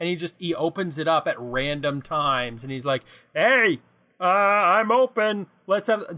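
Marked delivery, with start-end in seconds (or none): 3.3-6.0 tiny, slow, little robotic voice. Imagining a tiny robot man in a cuckoo-clock food truck, little robotic man voice. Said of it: "Am I just going to keep doing this voice?".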